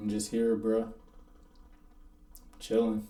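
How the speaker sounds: mock barely audible, soft, dejected, depressed mumble. Retelling lying in bed hurt when friends visited: imitating own depressed tone. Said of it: "literally in that exact tone. Just depressed as fuck".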